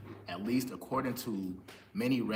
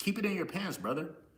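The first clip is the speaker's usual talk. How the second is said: very high-pitched put-on country dude accent; 10 semitones higher than usual.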